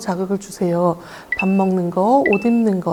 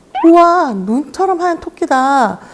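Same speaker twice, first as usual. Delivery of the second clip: put-on high, slow, swooping singsong baby talk, stretched-out words; 7 semitones higher, 7 dB louder than usual. Showing parents how to talk to a young child: high, slow, stretched words. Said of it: "높은 톤으로 억양을 강조하면서 천천히 단어를 늘려서 말해보세요".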